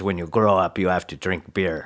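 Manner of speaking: put-on Austrian bodybuilder voice. Quoting a favorite line of Arnold Schwarzenegger: Arnold Schwarzenegger voice. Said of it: "That's my Arnold voice".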